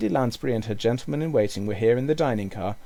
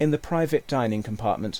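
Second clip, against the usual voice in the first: plain reading voice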